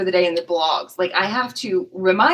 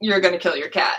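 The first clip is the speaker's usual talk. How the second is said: put-on harsh, blunt tone. Retelling own blog line to a reader: imitating own harsh blunt tone. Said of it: "some of my blogs are harsh".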